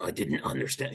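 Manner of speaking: low, soft, quiet, gravelly rasping voice. Reacting to a picture of him not understanding, attempt a gravelly Zelensky voice. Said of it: "He has this gravelly voice like this".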